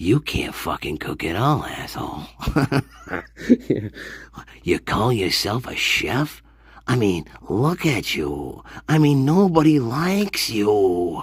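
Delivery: psychotic alter-ego voice. Pitching a show where a chef's alter ego speaks, Stanley's psychotic alter-ego voice. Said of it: "his psychotic alter ego".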